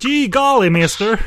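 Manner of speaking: put-on dubbed-film English accent, high and loud. Acting out a film character dubbed in English: put-on English dub accent. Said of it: "This would be my accent".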